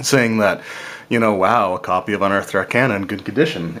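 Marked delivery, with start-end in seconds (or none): none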